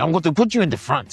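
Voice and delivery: put-on very loud, very high, thick Peruvian accent. Retelling a Peruvian mentor's words, imitating a heavy Peruvian accent. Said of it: "a heavy Peruvian accent".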